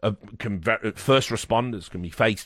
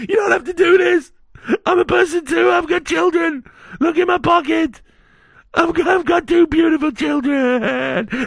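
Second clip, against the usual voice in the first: very high, very loud, terrified shrieking scream; 10 dB louder than usual. Speaker acts out a man's screams in a hypothetical, imitating a man screaming. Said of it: "the horrifying screams of the one man screaming".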